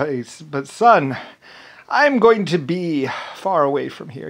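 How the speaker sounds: mock public-address voice. Retell what he told his son before he left, in an Abraham Lincoln accent. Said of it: "in his Abraham Lincoln accent".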